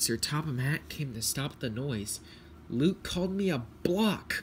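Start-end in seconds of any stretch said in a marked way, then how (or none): 2.7-4.4 high, spluttering, sputtered-out words. A man comes to stop the engines' quarrel and one engine speaks up: spluttering. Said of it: "spluttered Thomas".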